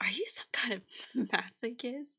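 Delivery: soft laughing through the word masochist. Demonstrating a line reading for the actor, laughing during 'masochist'. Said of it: "what if you tried laughing during masochist?".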